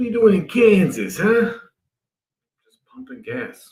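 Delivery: put-on light New Jersey accent. Retelling what someone said after he started watching The Sopranos: Tony Soprano Jersey accent. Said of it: "a little bit of Jersey accent".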